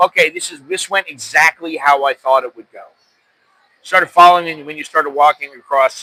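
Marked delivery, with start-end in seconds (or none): none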